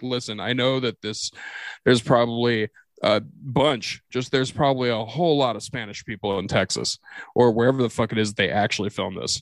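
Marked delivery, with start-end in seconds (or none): none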